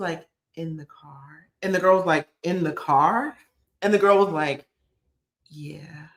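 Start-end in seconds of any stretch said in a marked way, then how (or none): 0.6-1.5 barely audible, hushed, ashamed voice. Retelling a girl's answer to another girl's question, imitating an ashamed voice. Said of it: "She was ashamed".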